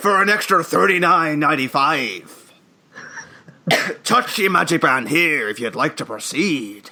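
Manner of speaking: rough, grating pirate voice. Joking about a pricey animatronic upsell, voicing it in Jack Sparrow pirate voice. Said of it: "that pirate voice is very grating on the throat".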